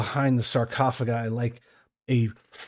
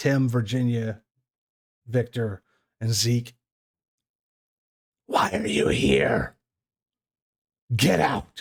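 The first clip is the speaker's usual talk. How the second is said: speaking in a hiss. A game master voices an unseen figure addressing the party, in a hissed voice. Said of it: "hear a hissed voice".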